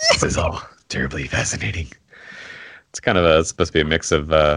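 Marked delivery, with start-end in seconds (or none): 0.1-1.9 breathy voice breathed out in a near whisper. A player demonstrates the purple character's catchphrase, in a Beetlejuice voice. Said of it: "You talk like that the whole time?".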